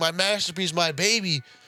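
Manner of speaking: mock, put-on crying voice. Retelling a scene where a builder's boat is torn apart: imitating a character crying. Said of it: "And he's crying".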